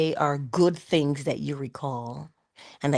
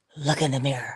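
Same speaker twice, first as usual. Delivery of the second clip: put-on serious, deadpan delivery. Retelling how father told a joke, imitating a serious father. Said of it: "And he was so serious".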